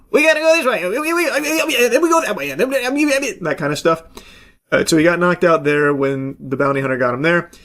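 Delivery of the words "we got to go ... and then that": squeaky, high-pitched alien voice. Retelling how a movie's aliens talk, in a high-pitched alien voice. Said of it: "They just have like high pitched voices going like".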